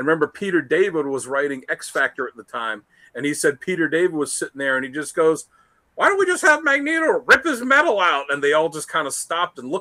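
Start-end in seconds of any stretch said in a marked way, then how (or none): 6.0-8.3 very high voice with swooping pitch. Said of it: "that was how he did Peter David's voice".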